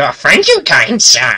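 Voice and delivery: eager, excited, over-grateful, gushing beggar voice. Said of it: "and then he goes".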